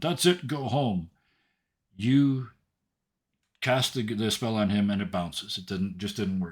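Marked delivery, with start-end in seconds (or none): 0.0-1.1 raised, higher-pitched calling voice. Voicing the head of the guards ordering protesters away: guard yelling. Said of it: "yells out again".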